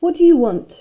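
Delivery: cold and unfriendly. Reading a story aloud, a character answering someone who calls her: frosty. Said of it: "said Miss Windsor frostily".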